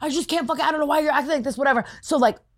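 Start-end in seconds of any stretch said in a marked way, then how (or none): 0.0-1.6 put-on frantic shouting, high, fast, rattled off. Retelling a friend's self-checkout trick: imitating fake frantic yelling. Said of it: "fake, frantically yelling".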